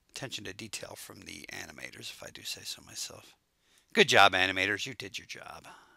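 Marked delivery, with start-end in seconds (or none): 4.0-5.7 sarcastic-sounding, louder. Commenting on the animation, praising the show's animators, sarcastic-sounding praise. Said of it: "Was that sarcastic sounding?".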